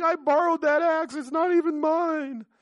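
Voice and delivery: very high, loud, whiny complaining tone. Telling the story of Elijah, the speaker acts out the neighbor who lost the axe, imitating whining. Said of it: "the guy starts whining".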